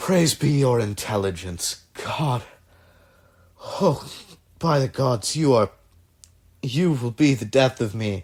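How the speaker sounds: speech with laughter mixed through the words. A man presses his forehead to the listener's, laughing while talking. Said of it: "laughing as he does so".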